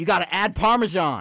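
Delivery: mock chef shouting, very loud and high.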